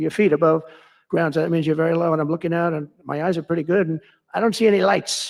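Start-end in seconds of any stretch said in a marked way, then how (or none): none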